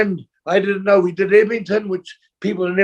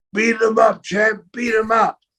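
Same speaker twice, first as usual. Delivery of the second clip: put-on yelling; 3 semitones higher than usual. Retelling how a person outside the ring shouted at fighting kids: retelling a yell. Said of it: "the person outside the ring was yelling out".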